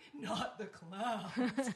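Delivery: loud, blubbering, tearful sobbing. Recalling a movie scene with a room stuffed with clown dolls, imitating a guy sobbing. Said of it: "I remember one guy sobbing".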